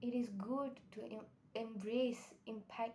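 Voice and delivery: stuttering, stumbling start on the word 'embrace'. Encouraging listeners to be themselves, stuttering. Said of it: "I'm actually stuttering".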